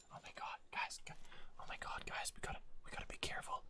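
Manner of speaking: whispered, hushed commentator voice. Casting a match, mocking how other casters whisper: whispering like other casters. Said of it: "Should I start whispering like, like other casters do?".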